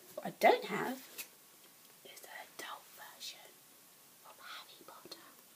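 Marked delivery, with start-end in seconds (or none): 2.0-5.2 very quiet, soft, breathy, hushed whisper. Talking about a Harry Potter book collection, whispering. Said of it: "I don't even know why I'm whispering".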